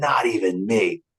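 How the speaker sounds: mean, nasty voice. Voicing the stepfather coming into thursday's world, in a nasty voice. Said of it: "I come in with this nasty voice".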